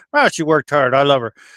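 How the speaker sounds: usual speaking voice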